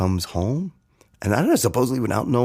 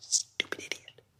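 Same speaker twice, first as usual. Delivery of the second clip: quieter mumbling, muttering under breath. Retelling an insult muttered at the dinner table: muttering under breath. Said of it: "I'm just under my breath".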